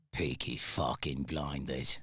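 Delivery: Brummie tough-guy Birmingham accent. Speaker challenged to try the show's accent, Peaky Blinders accent. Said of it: "I bet you could do that accent".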